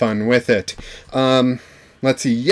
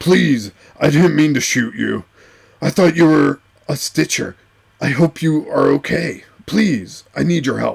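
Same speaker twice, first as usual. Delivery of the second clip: put-on rough, grumbly, pleading old voice. A game master voicing a surrendering pilot pleading with the players, terrible Harrison Ford impression. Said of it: "Something like old and grumpy?".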